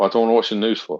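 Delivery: completely flat deadpan delivery, no reaction. Retelling the answer to a woman asking if the speaker watches the news: retelling a deadpan reply. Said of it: "completely deadpan and went".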